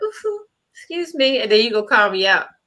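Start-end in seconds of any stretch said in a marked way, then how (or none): 0.0-1.4 prim, polite, high, dainty proper-lady voice. Retelling covering up a burp on live: imitating a ladylike excuse me. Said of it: "I tried to be a lady and cover mine up like".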